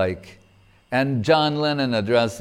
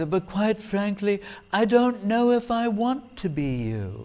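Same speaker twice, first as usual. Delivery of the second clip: put-on posh British accent, much higher pitch; 10 semitones higher than usual. Retelling what A.L. Basham said in reply, in A.L. Basham's posh British accent. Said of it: "posh British accent".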